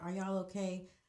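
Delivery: ordinary delivery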